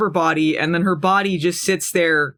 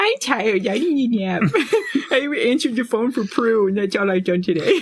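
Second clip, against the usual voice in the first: put-on childish baby voice; 4 semitones higher than usual. Retelling a scene where Phoebe talks after a phone call: imitating Phoebe's baby voice. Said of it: "Phoebe says in a baby voice".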